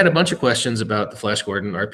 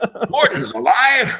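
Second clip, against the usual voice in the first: shoddy, badly done put-on cry, very high; 12 semitones higher than usual. Opening an episode about the Flash Gordon Kickstarter: worst Brian Blessed impersonation. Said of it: "that was my worst Brian Blessed impersonation".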